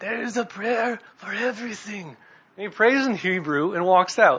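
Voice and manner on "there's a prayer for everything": put-on little sage old voice, pitched up. Retelling a movie scene, the rabbi answers the tailor in a little sage old voice. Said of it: "in his little sage old voice".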